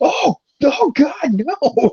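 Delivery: acted, very high, crying, drawn-out panicked cry. Retelling a cartoon scene where the hero flees a living statue: imitating panicked screaming. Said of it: "he loses his mind and starts running away".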